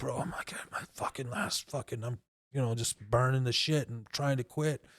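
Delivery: put-on low, hushed whisper with heavy drunken slurring.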